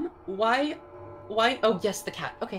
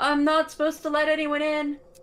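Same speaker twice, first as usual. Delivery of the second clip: put-on small child's high young voice, raised; 4 semitones higher, 5 dB louder than usual. Voicing someone inside the cave answering visitors who knocked, high-pitched young voice. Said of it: "you hear a, a fairly high pitched voice from inside. They sound quite young".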